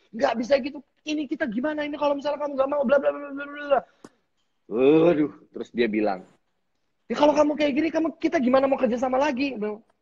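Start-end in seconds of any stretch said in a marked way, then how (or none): 0.1-3.8 shrill, very high, grumbling ranting tirade. Retelling a sponsorship dispute, the speaker mimics the other person's nagging: mock angry scolding. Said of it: "gayanya dia yang ngomel-ngomel itu".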